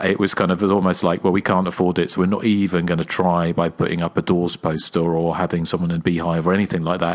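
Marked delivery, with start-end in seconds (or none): none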